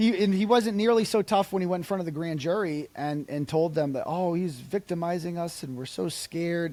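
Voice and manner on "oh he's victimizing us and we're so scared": mock put-on fearful voice, higher. Retelling a grand jury statement, mocking a fake victim. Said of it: "It's just such an act".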